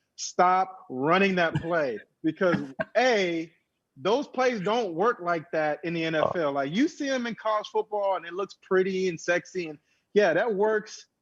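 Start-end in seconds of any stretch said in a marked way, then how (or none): 0.2-2.0 mock frustrated half-shout, slow and mild. Watching a play being called on TV, the speaker retells screaming at the TV. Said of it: "I'm literally screaming at the T V".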